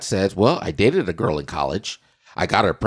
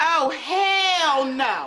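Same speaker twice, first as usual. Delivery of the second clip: mock very high-pitched forceful cry, hell drawn out. Reacting to a couple's news about having children: emphatic exclamation. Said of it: "And I say".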